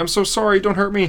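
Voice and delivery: frightened put-on begging. Retelling a comic scene, voicing a character pleading: imitating a scared plea. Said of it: "all scared".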